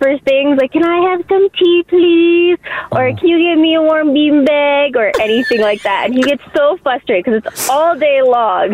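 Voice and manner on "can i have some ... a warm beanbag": put-on little babyish voice. Demonstrating how the speaker asks him for things all day long, little babyish voice. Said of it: "you put on like that little babyish voice".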